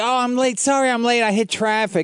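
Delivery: put-on effeminate voice.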